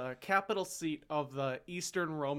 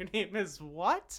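play-acted, spoken through a laugh; 4 semitones higher than usual. Telling a story of Romans asking a boy his name, retelling a laughing reply. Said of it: "the Romans laughed and went".

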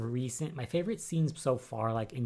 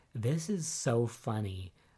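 usual speaking voice

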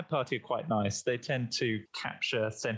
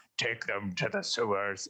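gruff, rough, angry orc man voice. Describing what a Kenku mimics for the party, the speaker does a gruff angry orc voice. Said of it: "mimics the sound of a gruff, orcish, angry man going".

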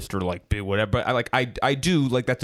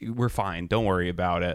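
very calm, completely unruffled tone; 3 semitones lower, 3 dB quieter than usual. Retelling a girlfriend's reply during a car ride: imitating someone speaking calmly. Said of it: "very calmly".

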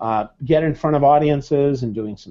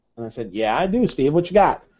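ordinary talk

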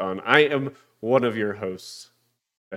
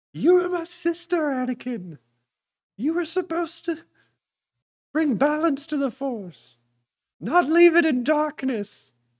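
very high-pitched womanly voice. Introducing the speaker's sister on a podcast, in a high-pitched Obi-Wan Kenobi voice. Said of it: "You're the one who made his voice high-pitched".

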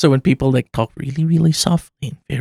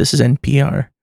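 slow whispered monotone. Two speakers joke about public radio, and one does an NPR-style slow monotone whisper. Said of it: "They have this monotone, and they whisper into the microphone".

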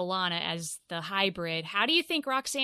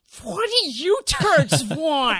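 put-on cartoon-girl voice, higher and louder; 7 semitones higher, 9 dB louder than usual. Describing a woman struggling to speak with teeth in her mouth, Shelley from South Park voice. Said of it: "she sounds like Shelley from South Park".

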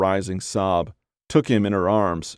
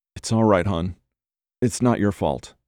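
barely audible, faint whisper. Jack reassures her, barely a whisper. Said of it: "barely a whisper".

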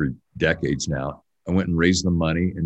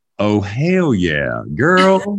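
put-on Texas accent, very slow, loud, swooping; 5 semitones higher, 6 dB louder than usual. Trying out a Texas accent with an exclamation: put-on Texas accent. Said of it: "I'm trying to get my Texas accent".

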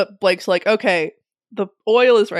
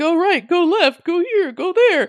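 mock very high, shrill, barked yelling; 10 semitones higher than usual. Retelling how he yelled directions at Peter, imitating someone yelling. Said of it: "he's like yelling at Peter".

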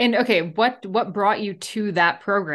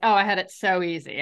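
plain

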